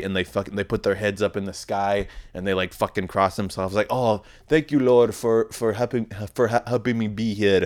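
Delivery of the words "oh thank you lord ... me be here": put-on Nigerian-sounding accent, much slower. Imitating soccer players thanking the Lord after a missed goal, possibly Nigerian accent. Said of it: "I don't know if I just did a fucking Nigerian accent".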